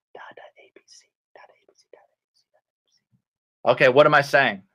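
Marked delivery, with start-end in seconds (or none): 0.1-3.7 softest voice, very soft, much quieter. Reading a story aloud, giving a character's line in his softest voice. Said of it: "So softest is like softest voice".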